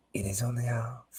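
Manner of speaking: very soft, whispered put-on French accent. Reading a woman's line into a man's ear in a story, French accent. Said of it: "Why am I doing the French accent?".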